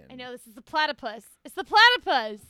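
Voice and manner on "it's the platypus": very loud shouting. A quiz contestant calls out the answer to a trivia question, shouting. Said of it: "if you could please stop shouting".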